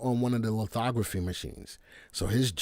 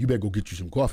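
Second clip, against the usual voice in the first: threatening, menacing, scary voice; 3 semitones lower than usual. Quoting what Clay said to him earlier, imitating Clay's scary voice. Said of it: "It was a very scary voice".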